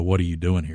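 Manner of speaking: acted, imitated intoxicated voice. Retelling a new bunkmate's question, imitating an intoxicated voice. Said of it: "in kind of a intoxicated voice".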